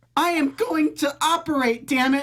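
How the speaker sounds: very high, distinct put-on woman's voice. Speaker impersonates a woman said to have a very distinct voice, impersonating her distinct voice. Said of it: "It's a pretty good impersonation".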